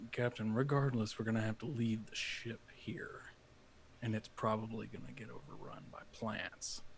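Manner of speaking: half-whispered aside under the breath. Speaking in character, quietly aside to the captain: half-whisper under breath. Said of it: "kinda whisper to her, not super close, but just under my breath".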